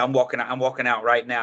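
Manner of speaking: ordinary delivery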